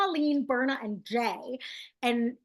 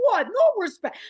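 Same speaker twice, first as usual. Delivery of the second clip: put-on very high, loud belted delivery in old-comedian style; 10 semitones higher, 6 dB louder than usual. Comparing a comedian's style, doing a Rodney Dangerfield voice. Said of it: "Like Rodney Dangerfield".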